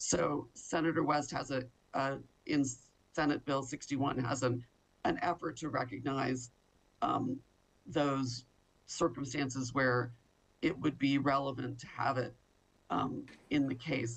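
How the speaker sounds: voice giving out mid-sentence, short of breath. Speaking in support of senate bill sixty-one, short of breath: losing voice. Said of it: "I'm losing my voice".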